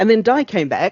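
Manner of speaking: high, loud, upbeat delivery.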